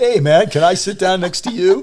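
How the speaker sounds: put-on very loud, high, perfect New Jersey accent. Retelling what a man from Oman said on walking over, in a perfect New Jersey accent. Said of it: "says with a perfect New Jersey accent".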